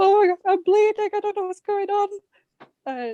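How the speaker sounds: mock very high, drawn-out, tearful panic. Recalling going down to her mum, thinking she was dying: imitating her past self crying. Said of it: "I went down to my mum crying".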